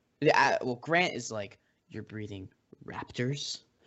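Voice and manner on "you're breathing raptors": low, hushed, grave, mock deeply worried delivery. Describing a scene from a movie, retelling a character's line, acting out very concerned. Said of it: "he says that very concerned".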